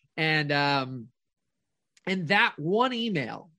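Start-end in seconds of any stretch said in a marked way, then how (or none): none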